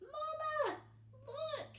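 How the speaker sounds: squeaky, very high little voice, drawn-out "Mama". Narrating Brightbill lifting off, voicing his call to Mama in Brightbill's squeaky voice. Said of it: "he squeaked".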